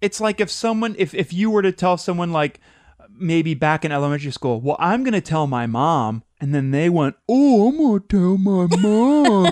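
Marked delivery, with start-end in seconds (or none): 7.3-9.5 mock little pretend cry, high and drawn out. Retelling how a schoolkid mocked someone who threatened to tell, mock crying. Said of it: "made like the little cryy".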